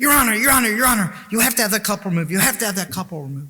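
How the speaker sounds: very high, loud, frantic top-of-lungs scream. Retelling how a defendant in court pointed and screamed: imitating someone screaming. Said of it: "he started screaming at the top of his lungs".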